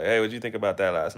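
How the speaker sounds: fast, rapid-fire, rattled-off casual delivery. Imitating someone asking a question quickly: imitating someone speaking fast. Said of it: "someone asks you something really fast".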